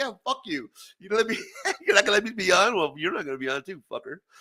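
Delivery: put-on taunting voice. Retelling picking up the phone to annoy an uncle: retelling a taunt. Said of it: "get him pissed off".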